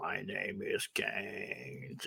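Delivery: very quiet, very slow, drawn-out whispered robotic voice. Recalling the first times a character was heard speaking: robotic Kane voice. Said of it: "une voix robotique".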